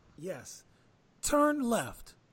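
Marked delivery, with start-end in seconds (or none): 1.3-2.1 car navigator style GPS readout voice. Responding to a joke about talking like the Waze instruction, Waze navigation voice. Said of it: "Talking like the Waze instruction".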